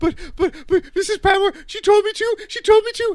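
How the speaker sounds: very high, loud, breathless, hyperventilating panicked pleading. Retelling the story, the speaker acts out Daisy's reply: imitating Daisy hyperventilating. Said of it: "starts hyperventilating".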